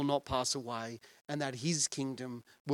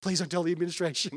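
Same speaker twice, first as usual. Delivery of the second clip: play-acted apologetic, begging, pleading tone; 3 semitones higher, 4 dB louder than usual. Retelling the physio realising his mistake: imitating an apologetic plea. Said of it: "he was so apologetic".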